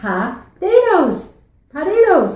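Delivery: sing-song Newfoundland accent on potatoes. In a Newfie lesson, the speaker shows how a Newfie says it, Newfoundland accent. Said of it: "Here's how the Newfie says it".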